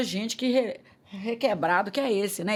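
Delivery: ordinary delivery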